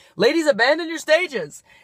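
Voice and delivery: loud, high-pitched club DJ announcer voice. Retelling how the DJ ended table dances for the night: DJ announcer voice. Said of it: "With that D J voice".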